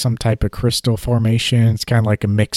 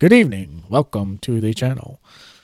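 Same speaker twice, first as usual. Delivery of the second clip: polished, formal evening newsreader delivery. Mocking the presenters' tone: mock news broadcast voice. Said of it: "talking to me like you're on some news broadcast".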